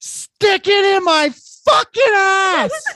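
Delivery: very loud, very high, shrill, drawn-out full-lung scream. Retelling what she suddenly yelled out of the darkness, retold yell at top of lungs. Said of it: "at like the top of her fucking lungs".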